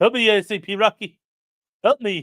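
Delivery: put-on cartoon character voice. Reading out a viewer's message asking for a Bullwinkle voice. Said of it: "Saying in a Bullwinkle voice".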